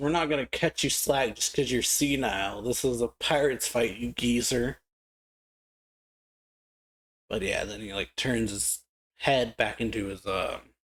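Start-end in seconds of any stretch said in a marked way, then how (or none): none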